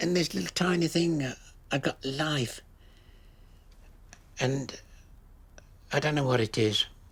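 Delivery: choked-up voice catching with emotion. Recalling delivering a baby and getting to hospital, the speaker becomes choked up. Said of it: "I'm getting emotional".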